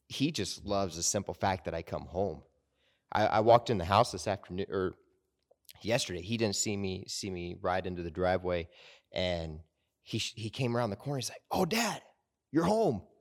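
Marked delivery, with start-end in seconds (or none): 11.5-13.0 put-on very high, thrilled, excited child's voice. Retelling a son's greeting on coming home: imitating excited son. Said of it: "there was this excitement".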